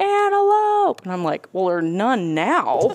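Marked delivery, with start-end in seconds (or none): 0.0-1.0 mock very high, loud, shrill piercing scream. Looking for arrowheads, speaker retells their dad screaming at the top of his lungs. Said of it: "he's screaming".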